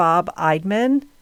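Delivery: ordinary delivery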